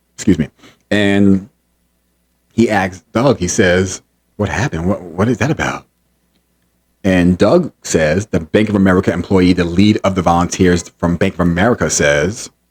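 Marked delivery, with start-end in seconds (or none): 4.4-5.9 hushed, half-whispered voice. Retelling a question one man asked another close by: imitating a half-whisper. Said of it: "Eric says in a whisper voice".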